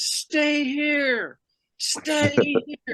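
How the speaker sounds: acted-out scream. Retelling a baseball play, quoting the first base coach, retelling a coach's scream. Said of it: "And he screams".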